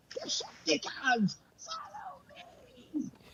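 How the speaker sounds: very high, swooping, animated cry. Retelling how he rallies players in a game: Starscream voice. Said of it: "So I get into that Starscream voice".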